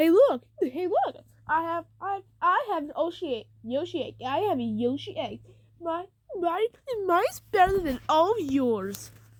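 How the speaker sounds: acted-out boastful show-off bragging. Retelling how he brags to all the Yoshis: imitating a bragging character. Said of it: "he starts bragging into all the Yoshis".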